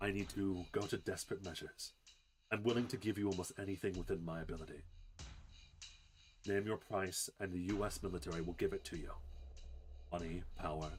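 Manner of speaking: spiteful, poisonous, venom-laced tone. Voicing an agent pleading desperately with a player: venom in her voice. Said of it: "venom in her voice".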